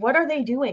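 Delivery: plain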